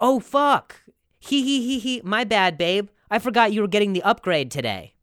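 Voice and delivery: light, high, giggling tone. Acting out the text a girlfriend sent: imitating Mel. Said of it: "She's like".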